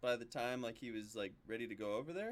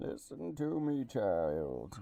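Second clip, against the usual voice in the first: loud, very slow villain voice, every word drawn out; 6 dB louder than usual. Playing a father raising child Banes, speaking to his child: Bane voice. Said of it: "why are you talking like that?".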